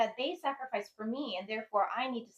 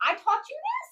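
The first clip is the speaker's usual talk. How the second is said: very high, loud cry of stunned disbelief; 7 dB louder than usual. A mother retelling her reaction to her son's answer, in retold high-pitched shock. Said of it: "my voice went up by an octave".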